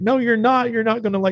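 high-pitched, flat voice. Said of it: "she's like".

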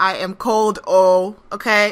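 loud, put-on Nigerian accent on whole phrase. Complaining to co-hosts about the cold while recording, in a Nigerian accent. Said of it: "As the Nigerians say".

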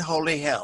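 ordinary talk

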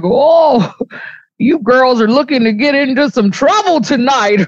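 put-on voice of a very old man. Retelling meeting Silas, the speaker quotes him imitating Silas, an old dude. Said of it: "He even talks like an old dude".

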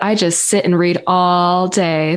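dry, ironic, tongue-in-cheek sarcastic tone. A librarian joking about what people think librarians do, sarcastic. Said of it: "That's called sarcasm".

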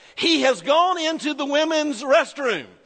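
loud, high-pitched call-out. Retelling what a smart-aleck college friend called out, in a loud voice. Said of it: "said in a loud voice".

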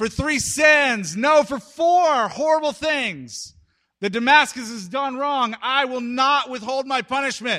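loud declaiming yell with the word "sins" drawn out. Retelling a prophet calling out to a listening crowd: imitating a yell. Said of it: "when Amos yells this out".

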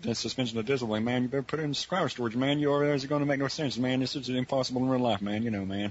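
fast, mumbly, lazy Texan drawl. Speaker says a Psycho Pass discussion turned them into Boomhauer: Boomhauer voice. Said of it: "turned me into Boomhauer".

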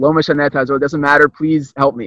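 ordinary delivery

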